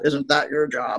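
muttered under the breath. Retelling a character's remark from this season, imitating a mutter under the breath. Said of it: "she mutters under her breath".

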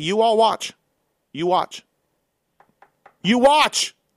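loud, insistent yelling. Urging the others to watch the coming races: yelling. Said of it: "I feel like you're yelling".

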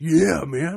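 slight surfer-bro voice. Joking about going undercover as bros: slightly surfer bro voice. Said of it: "That was a little surfer".

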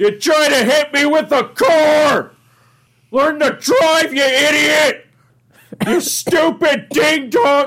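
very high, drawn-out furious screaming, "car" stretched out. Showing a Patrick Warburton impression, yelling at a bad driver: Patrick Warburton screaming voice. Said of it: "he had such a great screaming voice".

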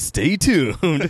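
high, over-the-top dramatic anime narrator voice. Closing a podcast segment with a teaser, in their best Dragon Ball Z voice. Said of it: "in my best Dragon Ball Z voice".

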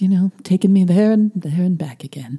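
hushed whisper.

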